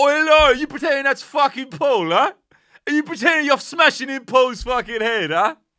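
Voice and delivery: very high-pitched, very loud, smug, cocky goading tone. Retelling how a man taunted Laura as she smashed butter: imitating Android Dave's cocky taunt. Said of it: "he gets all cocky".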